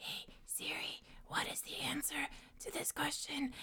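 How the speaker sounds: very quiet, breathy, nonchalant whisper, barely voiced. Retelling how a player secretly asked his phone for answers, retelling a whisper. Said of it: "he'd be like whispering like".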